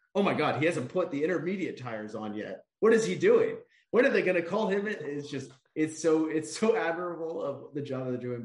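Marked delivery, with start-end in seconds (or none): 0.2-4.9 fast, swooping, excited commentator-style yelling. Mimicking how they react while no cars change positions, imitating yelling like a goal was scored. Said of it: "they're like yelling like a goal was just scored".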